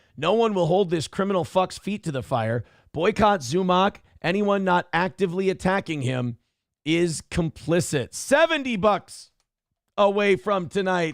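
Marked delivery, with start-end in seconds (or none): none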